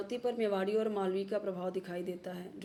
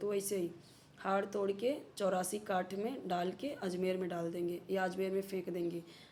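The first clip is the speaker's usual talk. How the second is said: plain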